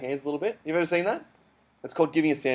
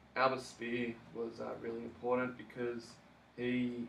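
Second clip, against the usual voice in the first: droning, very quiet, barely audible flat monotone; 3 semitones lower, 12 dB quieter than usual. Speaker showing how a presenter sounds when getting up to talk, flat monotone. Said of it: "as soon as that monotone starts happening".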